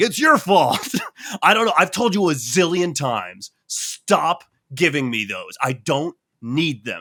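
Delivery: nonstop, blaming, yelling rant. Describing a woman at the pharmacy, the speaker acts out her yelling at the pharmacist. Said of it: "she's like yelling at this person".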